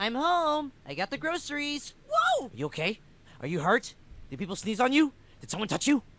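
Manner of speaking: big loud hollering voice. Performing a short skit on request, loud voice. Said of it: "a loud voice".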